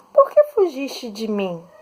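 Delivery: rising questioning intonation across the whole sentence. Portuguese example of an interrogative sentence, said with questioning intonation. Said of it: "Percebam que a entonação mudou".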